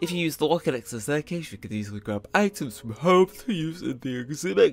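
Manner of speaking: talking through a yawn. Explaining the exhibit rooms to a visitor, talking through a yawn. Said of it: "I'm trying to talk through a yawn".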